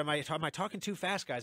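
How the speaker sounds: usual speaking voice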